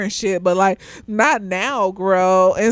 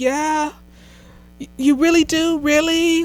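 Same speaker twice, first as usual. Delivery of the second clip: put-on childlike voice, high, slow and drawn out; 7 semitones higher than usual. Retelling a show scene where Richmond answers her: Richmond sounding like a child. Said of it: "Like a fucking child".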